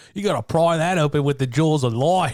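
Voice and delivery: loud, high, put-on Australian accent. Recalling a bit the speaker kept going with; Australian accent. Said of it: "came out with the Australian voice".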